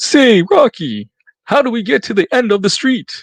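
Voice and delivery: high cartoon-character voice. Talking about a favourite old cartoon, the speaker tries an attempted Bullwinkle voice. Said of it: "I can't imitate it".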